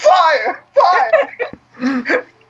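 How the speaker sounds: screaming, high-pitched. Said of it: "while you're screaming".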